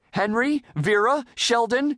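desperate, high-pitched calling. Mrs. puff calls on students, avoiding one in particular, calling out in desperation. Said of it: "she called out in desperation".

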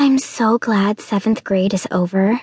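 ordinary delivery, nothing marked

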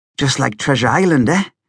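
plain

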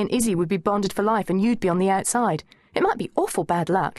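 ordinary talk

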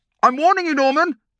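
very high, climbing, rising pitch. Narrator reads norm's dad warning his son norman, voice getting higher and higher. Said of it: "his voice getting higher and higher".

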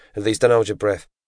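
plain reading voice

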